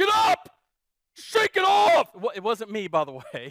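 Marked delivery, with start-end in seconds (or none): 0.0-2.1 mock yell, much higher, louder, slower. Telling about a player getting hurt at a game, imitating a dad yelling. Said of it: "a dad in the stand starts yelling".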